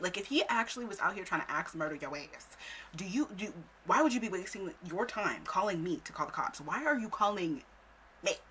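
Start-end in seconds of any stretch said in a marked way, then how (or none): none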